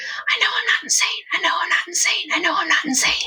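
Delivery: hushed voice. Describing voices heard near the throne room: whispering.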